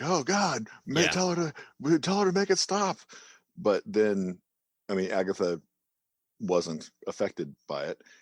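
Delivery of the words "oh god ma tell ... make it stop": mock, high, screaming outburst. Retelling how Norm comes out of it: imitating Norm screaming. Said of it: "basically just screaming".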